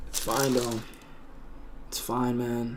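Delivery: soft, choked up and emotional. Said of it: "I'm getting very emotional right now".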